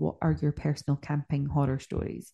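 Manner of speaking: normal talking voice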